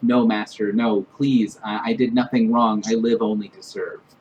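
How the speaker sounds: inward, murmured, pleading mutter. Voicing a horrified character reaching into embers: murmuring to himself. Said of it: "kind of murmuring to himself".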